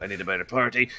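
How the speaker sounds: low mutter under the breath, said as an aside. Voicing a character muttering a complaint: talking quietly under his breath. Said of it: "he just talks quietly".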